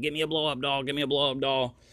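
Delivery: put-on screaming child voice. Retelling a child at a festival booth: imitating a child screaming. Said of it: "Alia's screaming".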